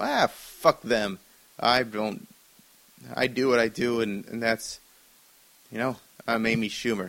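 normal talking voice

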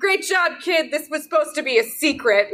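called out high and loud in a character voice. Yelling in character while stepping out into the hallway: character yelling. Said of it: "as I'm yelling".

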